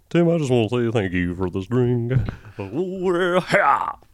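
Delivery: low, deep male voice with Southern drawl. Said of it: "His voice went low".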